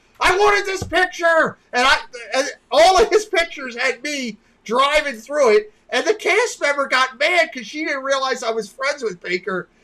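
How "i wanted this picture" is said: screaming, high, upset yelling. Retelling how Baker reacted to his ruined photo: imitating Baker screaming. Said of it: "Baker's screaming at me".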